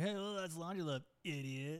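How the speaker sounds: high, half-hearted calling-out voice. Showing how a yell at the other speaker would sound: imitating a yell. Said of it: "if I yell at you".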